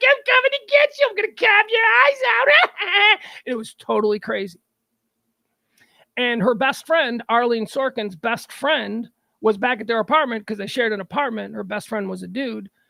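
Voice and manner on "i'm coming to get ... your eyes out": put-on very high, creepy, taunting clown voice, Brooklyn accent. Recounting an actress as a clown tormenting someone in dreams: Calliope Jones Brooklyn accent. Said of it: "she had like this Brooklyn accent".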